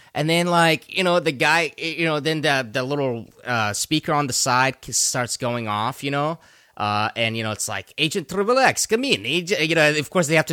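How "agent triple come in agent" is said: bad, clumsy, fake Russian accent, pitched up. Retelling what the little side speaker started saying: bad English-Russian accent. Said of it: "the bad a- english russian accent".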